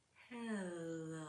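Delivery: very soft, very quiet, slowly stretched out. Leading listeners in saying hello as slowly as possible: slow, drawn out. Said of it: "Let's say hello as slowly as we can".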